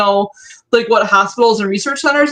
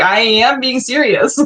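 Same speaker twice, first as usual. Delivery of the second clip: ordinary delivery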